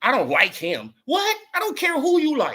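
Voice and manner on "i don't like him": whiny, pampered diva voice. Mocking a boxer who refuses a fight: imitating Tink talking like a diva. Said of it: "talking like a diva".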